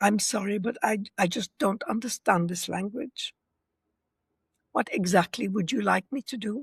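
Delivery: very calm, soft, even, neutral tone. Showing how to reply without sarcasm, in a calm, neutral voice. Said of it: "in a very calm, neutral voice, like".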